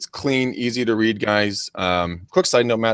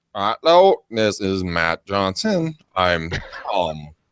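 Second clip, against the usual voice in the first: mock stiff, robotic voice; 3 semitones lower than usual. Imitating an untrained caller making a cold call: mock robotic voice. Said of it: "You're gonna sound like a ro-".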